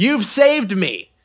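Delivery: loud, high yell. Acting out someone a lifeguard has just pulled from the pool, yelling. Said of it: "you start yelling".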